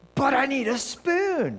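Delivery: mock whiny, very high, drawn-out child yelling. Recounting a kid knocking the water over for a spoon, imitating him yelling. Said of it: "he's yelling at me".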